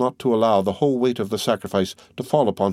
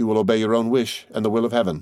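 plain

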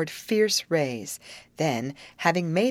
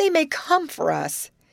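very high-pitched, begging, pleading tone; 10 semitones higher, 4 dB louder than usual. Her friend means to try again at the alligator; a girl answers, begging. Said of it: "begged Grace".

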